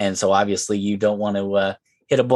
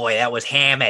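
put-on Boston accent; 2 semitones higher than usual. Retelling what a guy said after a golf putt, in a boston accent. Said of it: "The guy with the Boston accent goes".

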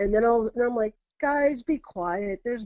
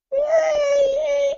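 very high, drawn-out little gremlin cheering squeal; 7 dB louder than usual. Retelling a strange voice heard outside the house, high-pitched gremlin voice. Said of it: "kind of gremlin voice".

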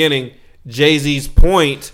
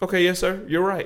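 calm, soft, pitched-up, compliant tone; 5 semitones higher, 8 dB quieter than usual. Speaker recounting how he answered a cop: retelling calm speech. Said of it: "I was okay and calmly saying".

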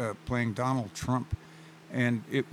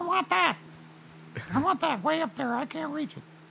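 monkey voice, much higher, faster. Speaker showing how his little monkey would talk while out shopping: strange little monkey voice. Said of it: "little monkey talks with a strange voice".

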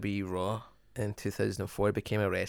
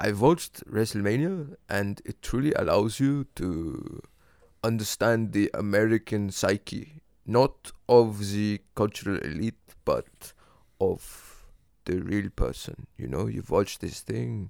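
put-on German-accented voice, louder; 5 dB louder than usual. Quoting a filmmaker on WrestleMania when asked to, in Werner Herzog voice. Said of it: "I'd like you to do it in his voice".

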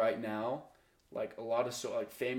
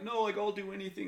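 put-on sobbing, high pleading bawling cry; 8 semitones higher than usual. Retelling a mother's frantic reaction to a fake AI call, imitating her bawling. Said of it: "she's like bawling".

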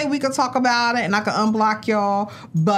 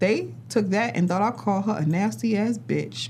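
ordinary talk, nothing marked

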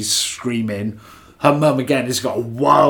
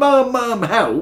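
mock frantic, high-pitched screaming; 11 semitones higher than usual. Speaker retells a scene where she surfaces in the bath; acting out screaming for help.

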